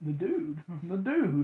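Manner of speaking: slow, drawn-out, unhurried film character voice. Playing a guessing game, saying the answer sounds like the Big Lebowski. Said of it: "Sound like the Big Lebowski".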